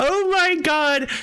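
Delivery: toned-down, high, mild little yell. Retelling seeing an email that a game has launched: imitating own shout. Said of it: "I actually shouted".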